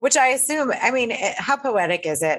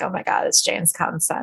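normal talking voice

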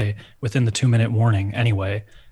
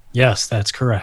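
flat, even-keeled monotone voice. Imitating a game show host who lacks personality: monotone Aaron Rodgers impression. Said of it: "very monotone, just like".

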